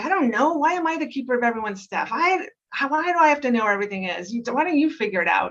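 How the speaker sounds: exasperated, highly irritated outburst. Explaining sleep-deprived reactivity, answering someone asking for the bread, with great irritation. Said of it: "And with great irritation".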